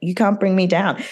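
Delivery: ordinary talk, nothing marked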